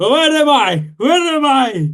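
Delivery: frantic, shrill, very high panicked scream. Voicing a game character who comes back alive not knowing where he is, screaming. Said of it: "he starts screaming".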